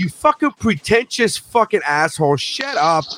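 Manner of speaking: high, fed-up, exasperated swearing outburst. Recounting watching a movie with his wife, retelling yelling at the TV. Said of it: "I'm yelling at the TV".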